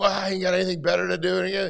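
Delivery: play-acted, high-pitched yelling. Retelling a traffic stop where the driver yelled: imitating a driver yelling. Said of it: "He starts yelling at me".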